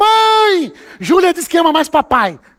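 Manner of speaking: high, loud, play-acted shouting. Retelling a son calling out to his mother: imitating a shout. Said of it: "Aí ele gritou".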